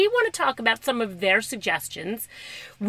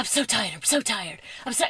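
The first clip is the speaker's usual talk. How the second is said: put-on weary complaining voice, quieter; 6 dB quieter than usual. Retelling how a friend walked around complaining: imitating Kathy sounding tired. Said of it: "she used to walk around and she used to go".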